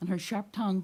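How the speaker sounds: ordinary delivery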